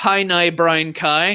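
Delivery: Northern Irish accent with Belfast-style vowels. Speaker from Belfast, asked for a demonstration, says a phrase: Northern Irish accent. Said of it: "with a Northern Irish accent".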